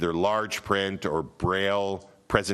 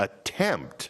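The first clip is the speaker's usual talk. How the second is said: emphasizing 'attempt'. Explaining caucus accessibility rules to listeners, stress on 'attempt'. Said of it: "I'm going to stress that word for you".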